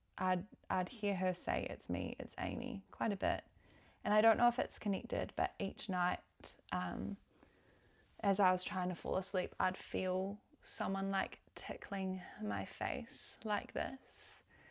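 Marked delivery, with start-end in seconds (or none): 1.7-2.9 very low, soft, hushed half-whisper. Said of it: "just whispering it".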